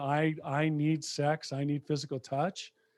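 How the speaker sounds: ordinary delivery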